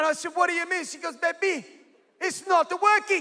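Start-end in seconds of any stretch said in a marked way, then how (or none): 1.2-3.2 put-on Bulgarian-sounding accent. Retelling what a woman said to him, in a Bulgarian-sounding put-on accent. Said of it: "I don't know if that's a Bulgarian accent".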